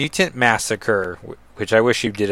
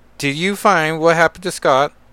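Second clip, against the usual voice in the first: fake British accent with pitched-up voice; 6 semitones higher, 4 dB louder than usual. Reading a comic scene where Kate catches up with Hazel, put-on British accent. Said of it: "It's my British accent".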